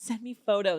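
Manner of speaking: mock-flirtatious man's voice. Retelling a man on the phone flirting with a woman, imitating him flirting. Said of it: "flirting with her".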